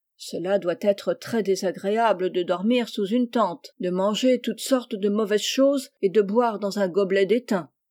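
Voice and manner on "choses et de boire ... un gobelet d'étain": plain reading voice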